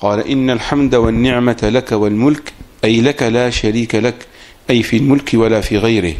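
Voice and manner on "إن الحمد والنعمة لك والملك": plain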